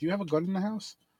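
put-on caring tone. Retelling a man asking Dave about a gun, mock concerned. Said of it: "acting like he was all concerned".

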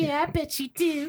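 high, slow girl voice impression.

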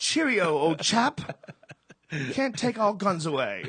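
slow put-on English accent, very high, shrill, very loud, booming. Imitating a man who talks to you, in a put-on English accent. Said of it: "he's talking to you in an English accent".

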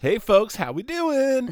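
very high, swooping, loud customer service voice. Walking up to restaurant tables to greet diners: higher customer service voice.

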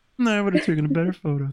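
high, froggy puppet character voice. Acting out a negative Nancy, talking like Kermit the Frog. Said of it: "talks like Kermit the Frog".

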